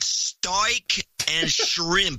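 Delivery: amateur put-on Australian accent. Showing off a practiced attempt: attempted australian accent. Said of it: "I've been working on my Australian accent".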